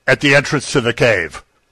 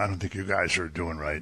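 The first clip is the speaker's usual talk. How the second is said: very soft, meek mock scolding tone. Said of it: "I'm sure he wasn't doing it going".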